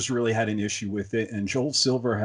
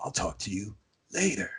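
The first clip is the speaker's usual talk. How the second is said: hoarse, breathy, raspy whisper; 7 dB quieter than usual. Imitating a favourite actor's line in a raspy voice. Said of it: "that raspy".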